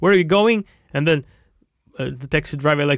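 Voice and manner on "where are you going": put-on Russian accent, raised and pitched up. Imagining speaking to a london taxi driver: put-on russian accent in english. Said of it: "speak with my Russian accent in English".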